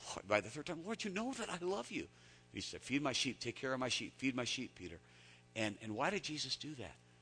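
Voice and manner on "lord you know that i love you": mock very high, fed-up, exasperated insistence. Preaching on Peter answering Jesus a third time, acting out exasperated Peter. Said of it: "you can hear the exasperation in Peter's voice".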